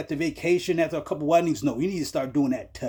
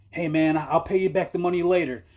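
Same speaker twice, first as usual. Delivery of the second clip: mock desperate pleading, stumbling over the first words. Retelling a movie scene where a debtor is choked: imitating Maury begging. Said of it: "now Maury's begging".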